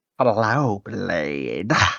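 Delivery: low, hushed, insect-like alien voice. Narrator reading a woman's greeting over a transmission, in a bug-like voice. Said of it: "She said in a bug-like voice".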